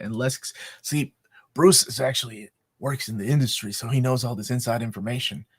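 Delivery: conspiratorial, insider-style half-whisper. Sharing inside information about a steelbook release, half-whispering. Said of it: "Why are you whispering?".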